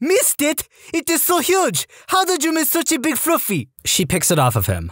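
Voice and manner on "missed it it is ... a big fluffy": put-on French-Canadian drill sergeant accent. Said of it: "female French-Canadian sergeant with this accent".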